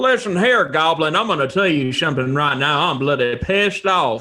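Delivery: put-on Texan hillbilly voice and accent. Introducing a new character who speaks to a goblin: Hillbilly Bucky voice. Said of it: "make my character Hillbilly Bucky from Texas".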